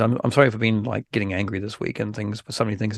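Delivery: normal talking voice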